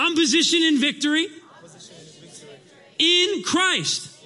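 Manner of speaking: declared with full, sincere conviction. Leading the congregation in a declaration: saying it like you mean it. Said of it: "Say it like you mean it".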